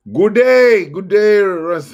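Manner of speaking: put-on Australian accent. Greeting Russ, put-on Australian accent. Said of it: "my old Australian accent".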